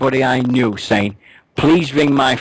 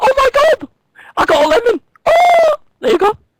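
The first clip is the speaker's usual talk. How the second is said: put-on high, loud, shrill posh English accent; 5 dB louder than usual. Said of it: "She was talking right posh and all".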